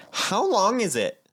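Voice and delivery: put-on high, girlish, blunt voice. Retelling how someone grabbed his hair and asked a question: imitating a girl's voice. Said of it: "in a girl's voice".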